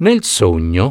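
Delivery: plain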